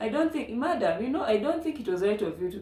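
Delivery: put-on Ugandan police-style accent. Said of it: "with that accent".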